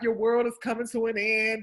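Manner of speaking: put-on little fake cry, sobbing. Retelling how he mimics her crying, in a mock crying voice. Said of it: "He mimics me crying".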